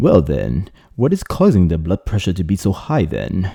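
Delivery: awful put-on English accent, sing-song. Explaining high blood pressure, voicing a person's question in a terrible English accent. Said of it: "ask this question with a terrible English accent".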